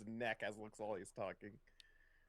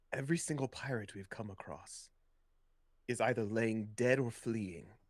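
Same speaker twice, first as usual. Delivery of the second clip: low muttering under breath; 6 dB louder than usual. Voicing a character muttering a threat to a pirate: muttering under breath. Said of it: "Yuki mutters under her breath".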